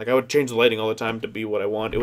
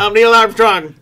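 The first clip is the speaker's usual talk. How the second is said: very high, very loud, shrill belted delivery; 11 semitones higher, 12 dB louder than usual. Teasing another speaker's impression, mocking their Neil Armstrong voice. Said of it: "Why does he say it like this?".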